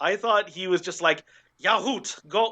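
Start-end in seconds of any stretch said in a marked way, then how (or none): 1.6-2.5 eager, excited put-on German accent. Retelling how Wily seemed to say his line: Wily in a German accent. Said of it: "saying Yahoo with, like, a German accent".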